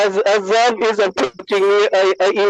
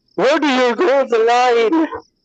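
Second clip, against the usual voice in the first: high, very loud, chastising scolding yell; 5 semitones higher than usual. Recounting a two a.m. scene, the speaker acts out chastising Zabinaya, retelling a very loud chastising. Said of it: "in like a very loud voice".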